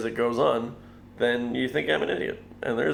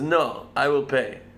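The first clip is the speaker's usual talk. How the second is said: slow, put-on German accent. Retelling how a man insisted on paying for the beer, in a german accent. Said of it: "Is that a German accent?".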